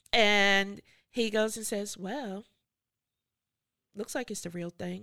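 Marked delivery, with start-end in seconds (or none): 1.9-5.0 real offhand, soft, unbothered, nonchalant delivery. Retelling how a man reacted on reading an urgent email, mock-nonchalant retelling. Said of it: "Real nonchalant".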